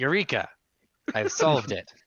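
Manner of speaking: loud, booming shout. Voicing the eye of the Ifrit behind a player: shouting. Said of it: "behind you shouts".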